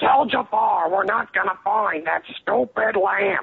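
slow, rough, creaky voice, words drawn out. Trying the impression again as Iago from Aladdin. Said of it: "That sounds like Gilbert Gottfried".

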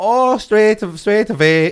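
put-on Swedish accent. Playing a customer returning a broken Hoover, answering in a put-on Swedish accent. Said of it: "just Swedish now".

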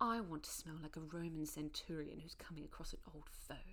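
put-on British accent. Quoting what she said, done in an imitated British accent. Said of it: "let me try to do the accent. But she didn't do this in a Russian accent. She did it in a British accent".

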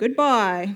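mocking, sarcastic, schoolyard-style tone. Retelling a childhood school joke of answering hello: imitating a sarcastic voice. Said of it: "in a kind of a sarcastic voice".

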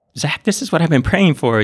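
put-on crying with high, tearful, pleading tone. Retelling his girlfriend begging him to join the prison program, imitating someone crying. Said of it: "she was like crying".

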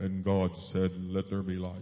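deep, low, loud, flat narration. Recalling an old Bible on cassette reading, in Alexander Scourby monotone. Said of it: "that monotone voice".

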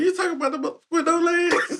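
very high, loud, squeaky voice. Laughing while recalling a comedian's bit: Katt Williams impression. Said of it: "all I think about is Cat Williams talking about".

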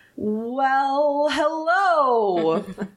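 put-on high, slow old turtle voice, shouted.

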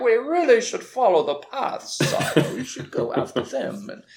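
put-on wry, swooping English accent. Retelling a scene from the show where the Inquisitor speaks, wry English Inquisitor voice. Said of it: "in his wry, like, English voice is like".

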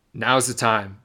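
ordinary talk, nothing marked

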